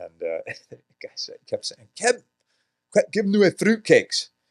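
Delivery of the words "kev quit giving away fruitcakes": put-on Scottish accent, very high and loud. Speaker quotes a buddy's Scottish coach in Australia: Scottish accent. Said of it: "he had a Scottish coach there".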